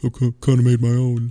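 put-on muttered aside, under the breath. Recounting a failed joke, the speaker quotes what someone said under his breath. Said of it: "said under his breath".

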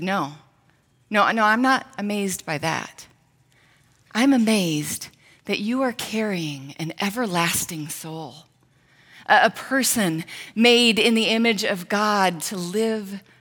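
acted, grave, earnest, very slow, dead-serious tone. Woman retelling her husband's answer to a teasing mother-to-be, retelling a serious reply. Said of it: "he very seriously just looked at her and he said".

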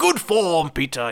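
put-on pirate captain voice. Plugging a video parody of the movie Hook: Captain Hook impression. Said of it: "That's my best impression".

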